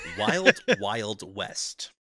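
clearly enunciated, every consonant hit, words kept apart. Repeating a phrase the way Neil deGrasse Tyson would say it: Neil deGrasse Tyson enunciation. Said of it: "the way that Neil deGrasse Tyson would. ... Just really enunciate it".

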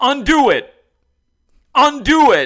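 in-your-face scream, very high, very loud, shrill. Describing a pranked guy confronting the prankster; retelling a yell. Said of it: "He kept yelling at him".

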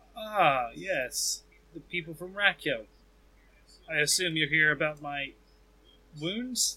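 drowsy, sleepy, just-woken voice. Voicing a wounded character who has just woken, greeting visitors: sleepy, just-woken voice. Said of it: "he kinda opens up a sleepy eye and he says".

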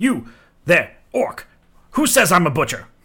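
loud, swooping, cranky, irritable, curmudgeonly voice. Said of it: "shaking his finger wildly in the air, curmudgeonly".

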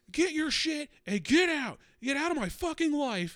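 overly dramatic shrill, loud screaming. Retelling the first day at the office, imitating a man screaming. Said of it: "just hear this dude just sc-, screaming".

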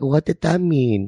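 put-on timid, high, slow shy little-kid voice. Retelling own reply to strangers' invitation: imitating a shy little kid. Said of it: "I turn into, like, a little kid".

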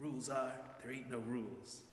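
hushed, soft, dramatic, cinematic delivery. A preacher recalls a film line he and his siblings repeated, in a dramatic Leo movie tone. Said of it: "with the same dramatic tone that Leo in the film uses".

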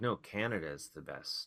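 plain

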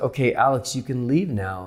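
normal talking voice

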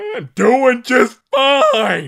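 very loud, very high, swooping, over-the-top voice. Answering the other Warburton in a two-person bit: loud Patrick Warburton impression. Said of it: "I'm going to do the loud".

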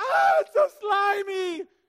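put-on very high, very loud, very slow, shrill girlish scream. Retelling the Moses story, the speaker acts out his reaction: Moses mock-screaming like a teenage girl. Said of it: "He screamed like a teenage girl".

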